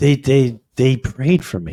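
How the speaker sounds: put-on crying, tearful voice. Retelling how his wife came back from being prayed for: imitating someone crying. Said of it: "And she starts crying".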